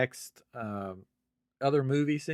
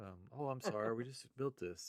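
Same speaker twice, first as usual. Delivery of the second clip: very quiet, soft, respectful, very polite tone; 12 dB quieter than usual. Imitating Mando talking to officers: very respectful Mando impression. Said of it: "very respectful to the officers".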